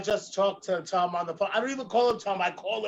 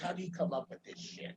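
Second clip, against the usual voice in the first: put-on expressionless deadpan, whispered and hushed; 12 dB quieter than usual. Retelling a celebrity reading of Pamela Anderson's book, retelling Bea Arthur's deadpan. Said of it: "gives her legendary deadpan look and says".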